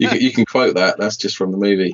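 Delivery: plain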